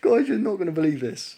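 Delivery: very loud, high-pitched, talking through laughter. Telling viewers about collecting parts, laughing while talking. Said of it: "I don't know why I'm laughing".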